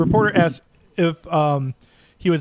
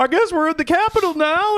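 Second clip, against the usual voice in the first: very high, aimless, clueless wondering aloud; 13 semitones higher than usual. Describing videos of people inside the Capitol, imitating an aimless Capitol rioter. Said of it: "they're just walking around like".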